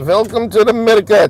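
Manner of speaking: mock, put-on broken English accent. Driving around the block on a live stream: put-on broken English. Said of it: "That's my broken English, uh, impersonation".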